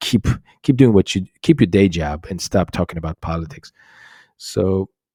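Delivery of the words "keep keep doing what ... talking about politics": ordinary delivery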